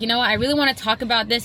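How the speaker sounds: plain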